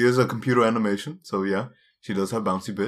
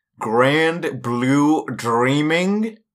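put-on American accent, pitched up; 5 semitones higher, 4 dB louder than usual. Asked to repeat an anime title, the speaker says it in a put-on American accent. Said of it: "What do you think my American accent?".

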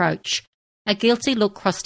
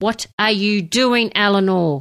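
barely controlled anger; 4 semitones higher, 4 dB louder than usual. Merek follows eleanor into their tent and confronts her with barely controlled anger. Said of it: "His anger was barely under control".

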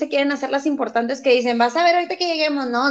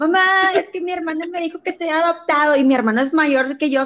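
mock-crying, tearful voice; 2 semitones higher than usual. Retelling how a brother ran crying to their mother, imitating crying while complaining. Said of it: "se iba llorando mi hermano".

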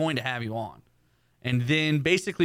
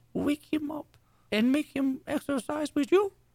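put-on grandmother voice, pitched higher; 13 semitones higher than usual. Asking for clarification, quoting the grandmother: imitating the grandmother's voice. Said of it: "That same exact voice".

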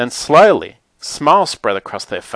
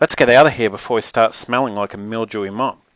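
plain reading voice

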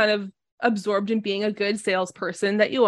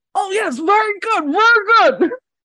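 very high, loud talk through a stuffed mouth; 11 semitones higher, 7 dB louder than usual. A game narrator voices a blue dragonborn eating a whole dish, talking with mouth stuffed. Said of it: "with his mouth stuffed goes".

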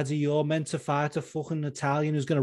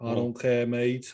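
put-on Scouse voice, deeper and lower pitched; 4 semitones lower than usual. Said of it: "Patty's voice is deeper. He's like".

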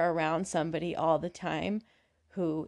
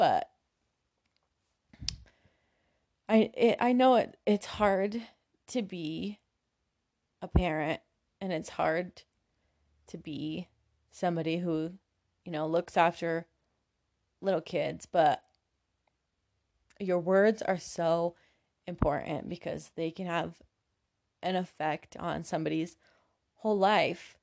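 voice getting choked up with emotion. An educator speaking about how adults talk to kids, getting choked up. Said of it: "Sorry, I'm getting choked up a little bit".

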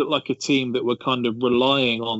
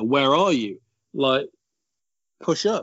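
put-on fed-up pundit voice, slow and drawn-out; 3 semitones higher than usual. Retelling how Shearer watched the game back and screamed at the screen: imitating Shearer screaming. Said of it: "he was screaming at the screen".

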